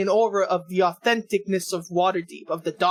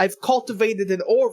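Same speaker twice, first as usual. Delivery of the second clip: ordinary talk, nothing marked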